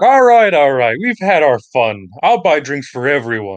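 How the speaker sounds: loud, animated, swooping in-character yell. Voicing a character who calls out to the tavern: character yelling. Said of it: "Yuza yells out".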